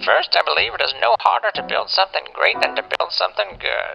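stupid-sounding voice. Reading a quoted passage aloud while commenting on it, in a stupid voice. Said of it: "I'm doing a stupid voice".

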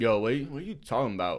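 put-on thick, dumb, dopey voice. Recounting a surprisingly good response, quoting it in dumb Jake Paul voice. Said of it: "He said it in a dumb Jake Paul voice".

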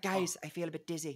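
poorly done fake Irish accent. Telling how Aoife passed out in the hot studio, the speaker quotes her in a bad Irish accent as Aoife. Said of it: "That was a very bad accent".

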